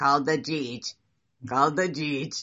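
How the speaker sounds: put-on very low, loud toddler voice. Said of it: "she has this very low voice".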